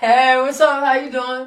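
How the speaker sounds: playful put-on sexy, seductive voice. Greeting a woman who just joined them, in a put-on sexy voice. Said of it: "That was a sexy voice, right?".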